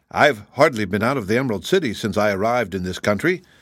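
ordinary delivery

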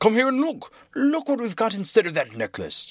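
high, giddy, bursting with excitement. The king, dancing around the open chest, calls others to come look: excited. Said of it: "dancing in excitement".

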